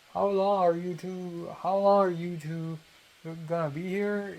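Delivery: put-on light Mandarin accent over mostly American speech. Retelling what a woman asked the speaker and Kiara, mild Mandarin accent. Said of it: "Let me try a Mandarin accent".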